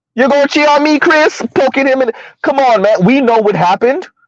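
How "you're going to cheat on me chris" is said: put-on heavy Caribbean accent, pitched high. Imagining the fight, speaker acts out her confronting him in a heavy Caribbean accent. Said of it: "all heavy Caribbean accent".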